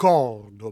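Cordoba with stress on the first o. Explaining a Spanish city name in French: stress on first syllable of Cordoba. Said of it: "on met l'accent sur le premier O".

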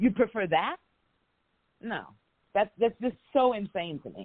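slightly angry outburst. Speaker mid-rant, just before apologizing for getting angry: a little angry. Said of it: "I'm got a little angry".

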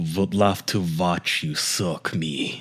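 slow, put-on vampire-style accent. Reading aloud the messages he sent, in a vampire accent. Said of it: "you sound like Vladimir, a vampire or something".

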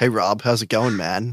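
put-on American accent. Greeting the host on arrival, a guest speaks in a put-on american accent. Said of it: "Is that your American?".

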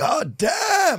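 very high-pitched, pitched way up. Recalling what a father used to say all the time: imitating father's exclamation. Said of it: "That's what my father used to say".

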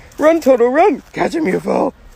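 high-pitched storybook witch voice. Speaker carrying on a bit while working on audio, in a Wicked Witch voice. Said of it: "now I sound like the Wicked Witch".

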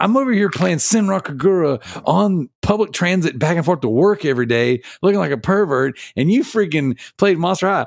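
high-pitched, aggravated ranting.

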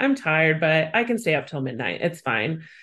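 usual speaking voice

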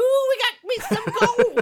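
put-on shrill old prospector voice, very high and very loud. Describing a type of western character: old prospector voice. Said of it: "it's that old prospector".

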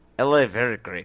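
put-on Russian accent. Showing the other speaker how the accent should be done, russian accent.

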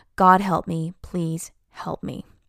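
ordinary talk

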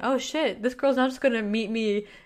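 normal talking voice

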